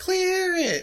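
very high squealing scream with a laugh.

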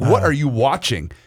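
put-on, eager, bursting with excitement. Retelling how a friend reacted on hearing a trailer: imitating an excited question. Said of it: "as in, like, excitement".

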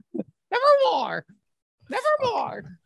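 very high, swooping, eerie spooky woman's voice. Speaker talks about crows in spooky movies, imitating that lady. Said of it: "Sounding like that lady".

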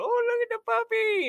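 put-on very high six-year-old child voice. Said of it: "the six-year-old [name]".

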